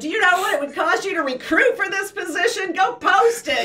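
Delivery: emotional outburst. Retelling an argument with a boss: retelling an emotional outburst. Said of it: "where I got emotional and I said".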